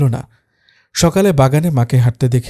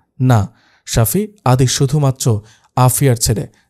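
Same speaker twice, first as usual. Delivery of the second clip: usual speaking voice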